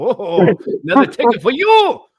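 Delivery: very loud fake German accent. Retelling a cop's words in a joking donkey story: put-on German accent. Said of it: "Now I sound German".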